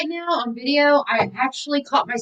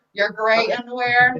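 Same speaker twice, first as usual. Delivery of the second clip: plain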